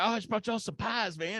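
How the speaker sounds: mock excited and happy. Telling a story, the speaker imitates Tony arriving, all excited and happy. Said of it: "he's all excited and he's all happy".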